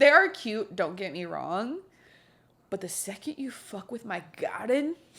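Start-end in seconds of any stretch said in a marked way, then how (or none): 2.7-5.0 hushed, soft, attempted Sicilian mobster accent. Speaker talking about squirrels with a co-host, trying a Godfather accent. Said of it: "I don't know what, what accent I'm doing. I was trying to do like the Godfather".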